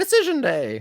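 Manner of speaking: squeaked out, very high pitched. Told to say the event name a certain way, in a Mickey Mouse voice. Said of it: "like Mickey Mouse".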